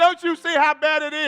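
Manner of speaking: frantic, hysterical, loud, panicked pleading. Describing how someone reacts to a bad situation, imitating someone freaking out. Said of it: "you freaking out like".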